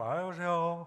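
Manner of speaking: speaking through a mock yawn. Recalling childhood greetings to his father, retelling a yawning greeting. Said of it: "하품 섞인 말투로".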